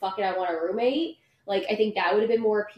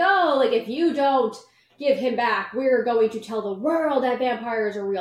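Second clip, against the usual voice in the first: dripping with heavy sarcasm, acted out; 2 semitones higher, 3 dB louder than usual. Recounting a scene from a book, the speaker acts out characters speaking very sarcastically. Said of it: "so very sarcastically".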